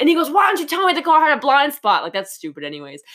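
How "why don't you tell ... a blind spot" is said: angry, bullying, pitched-up berating. Retelling a film scene where Biff berates a father: imitating Biff cussing someone out. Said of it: "he's cussing his dad out".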